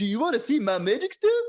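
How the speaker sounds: mock Norwegian accent with a Danish-style sound. Asking someone if they want to see magic stuff, mock Norwegian accent. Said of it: "this accent is how Danish people make fun of Norwegians".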